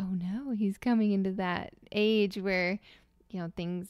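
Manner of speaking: ordinary delivery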